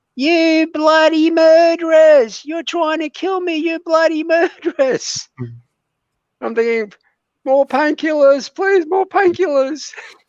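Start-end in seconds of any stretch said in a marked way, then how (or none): 0.2-5.3 very high, shrill, top-of-the-lungs screech. Retelling a woman in intensive care, imitating someone screaming. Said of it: "she's screaming at the top of her voice".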